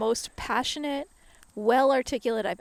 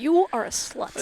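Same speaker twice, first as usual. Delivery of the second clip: plain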